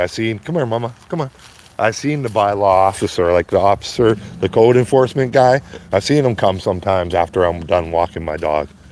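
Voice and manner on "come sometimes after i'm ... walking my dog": ordinary talk, nothing marked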